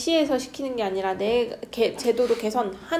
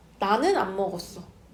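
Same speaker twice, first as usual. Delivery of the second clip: heavy emphasis leaning on 나는; 3 semitones lower than usual. Retelling a younger brother denying eating the cake, stress on 나는. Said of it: "강세 넣었지".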